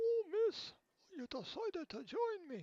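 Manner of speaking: put-on Scottish accent, very high and very slow. Reading a game character's lines aloud: scottish accent. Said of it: "I don't know why I gave him a Scottish accent".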